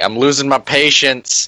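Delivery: high, stretched-out, drawn-out yell. Banging on a blast door from outside: yelling. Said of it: "And me yelling".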